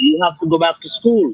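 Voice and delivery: normal talking voice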